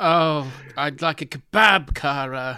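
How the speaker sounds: put-on loud, very slow, drunken, dragging growl. Imitating how Peter O'Toole talks in the film: Peter O'Toole drunk growling impression. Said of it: "he just talks like that all the time".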